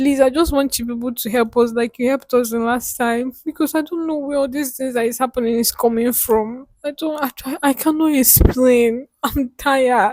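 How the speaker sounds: tearful pleading. Pleading with people to help again like last time; crying while pleading. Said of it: "Don't cry".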